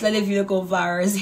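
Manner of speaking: put-on Liberian accent.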